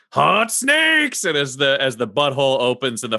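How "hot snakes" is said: very high, shrill shout. Game master voicing a character casting a fire spell at enemies: yelling. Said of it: "he just yells".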